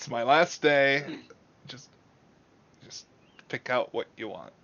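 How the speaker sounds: put-on uninterested teen clerk voice. Voicing a goth teen clerk telling customers to pick clothes: uninterested goth teen clerk. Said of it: "She is very uninterested".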